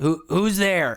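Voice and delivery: rough, gruff voice, loud. Telling a story where someone answers a knock on the door, in a gruff voice. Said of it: "a kind of gruff voice come back".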